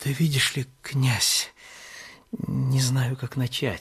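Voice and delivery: faltering, unsure, hesitant mumble. A godson struggles to begin a private talk with the prince, mumbling hesitantly. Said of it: "Да не мямли".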